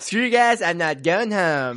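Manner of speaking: put-on high, bratty cartoon-kid voice. Repeating a South Park line, in a Cartman impression. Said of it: "I actually do a pretty good Cartman impression".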